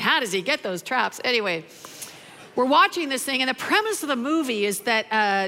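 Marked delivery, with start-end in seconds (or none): none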